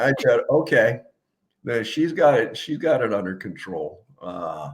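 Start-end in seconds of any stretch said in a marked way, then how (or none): none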